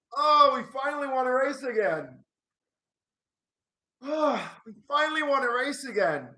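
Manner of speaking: tearful happiness. Fan celebrating a finally won race, crying with joy. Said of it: "I'm actually crying".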